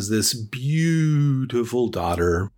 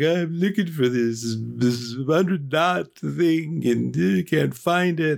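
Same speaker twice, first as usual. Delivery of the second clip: high, whiny, sobbing crybaby voice; 5 semitones higher than usual. Telling a folktale, the character answers the Buddha: acting crying. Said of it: "he's crying".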